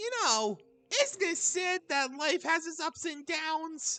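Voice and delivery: voice cracking mid-line. Voicing a character's line, before stopping for water and a retake, voice cracking. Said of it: "That voice crack, though".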